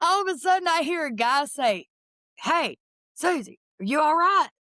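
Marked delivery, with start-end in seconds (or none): 2.4-4.5 put-on rough, country twang. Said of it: "He sound like a redneck".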